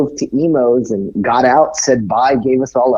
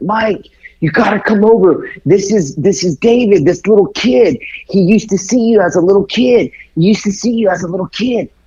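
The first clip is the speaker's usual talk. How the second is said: yell, higher pitch; 8 semitones higher than usual. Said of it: "she started yelling at [name]".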